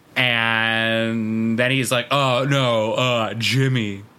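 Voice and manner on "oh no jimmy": put-on wooden bad-actor delivery, much lower. Speaker mocks an actor who can't act, doing an impression of a bad actor. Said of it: "Is that a good impersonation?".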